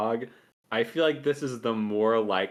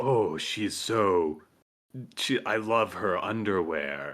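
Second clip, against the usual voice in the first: slow, sultry, seductive put-on purr; 3 semitones lower than usual. Mimicking how he voices an inner monologue, imitating his sexy voice. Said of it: "he does like this sexy voice".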